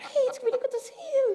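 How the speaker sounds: high, laughing, starstruck gush.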